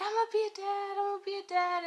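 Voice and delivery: very high, loud, crazed, wild screaming. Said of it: "He started screaming".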